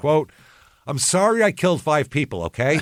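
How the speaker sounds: offhand, irritated brush-off. Imitating the killer's apology the way he said it: imitating a dismissive apology. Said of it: "when someone says it like this".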